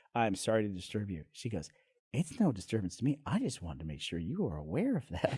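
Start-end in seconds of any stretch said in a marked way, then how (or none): 2.1-5.4 little Texas lady voice, swooping sing-song lilt. Retelling what a woman told the speaker after overhearing them, in a little Texas lady voice. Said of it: "little Texas lady voice".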